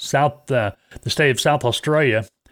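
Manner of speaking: put-on Australian accent.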